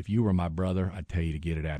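put-on drawling Southern accent. Retelling the doctor's advice in the exam room: imitating Doctor Thrasher's Southern drawl. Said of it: "He had kind of a Southern drawl".

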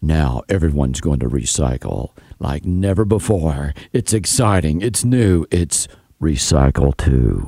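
very low, big movie trailer announcer voice. Joking about exciting recycling movies, doing the movie voiceover guy voice. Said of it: "movie voiceover guy going".

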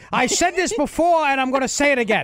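mock rant, high-pitched and fast. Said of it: "he starts out like old Bernie".

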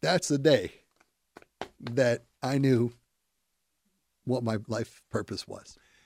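choking up, emotional, close to tears. Telling the story of a patient's recovery, choking up. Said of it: "I actually am choking up right now".

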